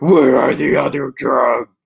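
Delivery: loud, rough voice. Agreeing after being teased, trying the film hero's voice: Batman voice impression. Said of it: "Batman's voice is less distracting".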